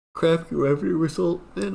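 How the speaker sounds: talking through a yawn. Commenting on a stock's earnings result: yawning while talking. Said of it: "I don't know why I'm yawning".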